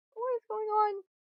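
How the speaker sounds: high, panicked, freaking-out voice. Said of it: "he's, like, freaking out".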